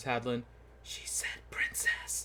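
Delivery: soft whisper under the breath. Voicing a character who leans over to another character: whispering. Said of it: "and he whispers".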